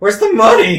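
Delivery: very high, very loud, squeaky, shrill tough-guy menace. Player's character confronting a man who just laughed: trying to sound intimidating, squeaking. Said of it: "to sound intimidating, but kind of the voice kind of squeaks a little".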